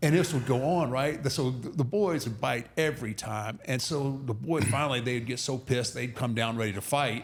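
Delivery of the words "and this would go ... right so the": usual speaking voice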